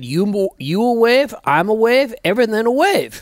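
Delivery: put-on heavy Korean accent. Quoting the way a man used to talk: thick korean accent. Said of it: "in a very thick Korean accent".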